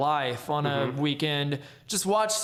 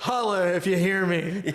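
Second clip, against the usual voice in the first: fake shouting, higher; 3 semitones higher than usual. Continuing a joke bit with another speaker: mock yelling. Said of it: "you don't gotta yell".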